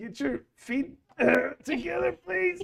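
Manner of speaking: very high, maximally strained voice. The narrator voices the man still holding it up on the other side, in the most strained voice possible. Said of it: "In his the most strained voice possible".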